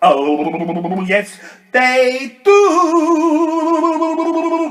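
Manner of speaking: loud, wobbling voice, very slow and drawn out. Answering the storyteller's request, saying the water's line: wibbly wobbly voice. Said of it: "Say it with a wibbly wobbly voice".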